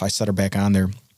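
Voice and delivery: ordinary talk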